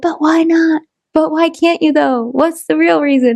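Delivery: small, wee voice. Retelling the inner voice that questioned the speaker's doubts, in a little tiny voice. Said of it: "I heard a little tiny voice go".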